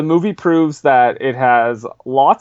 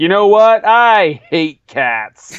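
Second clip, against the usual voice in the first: put-on surly voice, higher; 5 semitones higher, 4 dB louder than usual. Retelling the film's opening voiceover by Kevin Spacey: surly Kevin Spacey voice. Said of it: "a very surly voiceover from Kevin Spacey being like".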